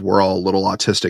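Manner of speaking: ordinary talk, nothing marked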